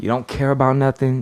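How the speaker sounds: ordinary talk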